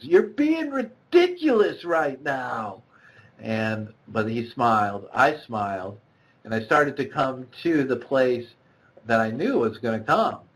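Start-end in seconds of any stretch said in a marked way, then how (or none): 0.0-2.8 put-on high, swooping yell at the top of the lungs. Retelling pointing trekking poles at the sky: imitating own yell. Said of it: "yelled at the top of my lungs".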